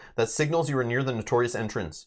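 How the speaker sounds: plain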